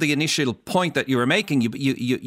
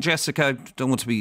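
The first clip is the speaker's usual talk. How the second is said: ordinary delivery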